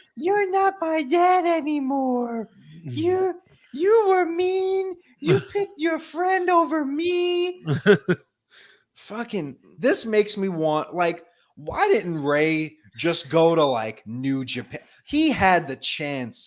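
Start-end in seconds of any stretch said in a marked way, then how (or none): 0.2-7.7 very high, would-be menacing voice, "me" drawn out. Acting out your past self trying to be menacing, in a high-pitched voice. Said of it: "with my high pitched voice and I'm like".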